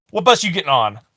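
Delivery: mock intimidating tough-guy tone. Retelling an old security guard questioning the speaker about a bus, mock-intimidating. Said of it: "he tried to be intimidating with me".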